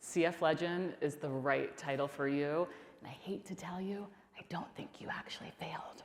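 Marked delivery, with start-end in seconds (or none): 3.0-6.0 soft, breathy, hushed near-whisper. Thanking Bill for being there with them today, in a quiet voice. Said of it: "(QUIET VOICE)".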